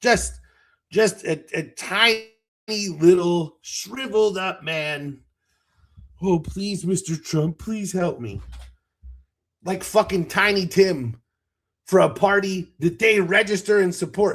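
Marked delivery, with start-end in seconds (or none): 6.2-8.4 on-its-knees groveling, begging tone. Mocking men in MAGA hats by acting out their begging, mock pleading. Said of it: "begging like dogs for attention".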